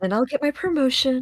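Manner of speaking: mumbling in a high voice. Voicing a guard walking down the hall to himself: mumbling. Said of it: "You just hear him mumbling down the hall".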